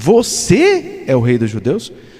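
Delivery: hard, strong stress on você. Reading a question from a greek text: stress on 'você'. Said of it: "se a gente enfatizar o você".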